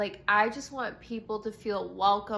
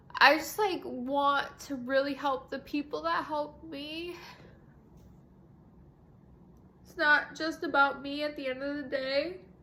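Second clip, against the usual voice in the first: tearful, weeping through words; 5 semitones higher than usual. Speaking about her coach and friend, unable to stop crying. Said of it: "I can't stop crying".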